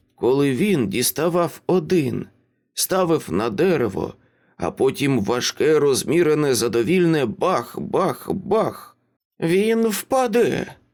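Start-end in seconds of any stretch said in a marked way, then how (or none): 9.4-10.7 spiteful, nasty, pitched-up tone. A mother speaks to her daughter, nastily. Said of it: "бридко сказала вона".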